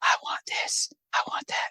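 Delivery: hushed, soft, quiet whisper. Imitating how she asks for what she wants: imitating a whisper. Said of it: "I'm whispering".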